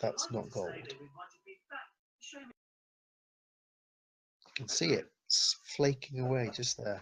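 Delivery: quiet, mumbled, muttered under the breath. Telling the party the temple roof isn't gold: saying it quietly, mumbling. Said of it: "I'm just saying it quietly to you lot, mumbling".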